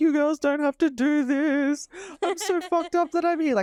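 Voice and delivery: hysterical breakdown, pitched very high. Retelling a man's meltdown on the floor after his wife kept calling, imitating hysterical.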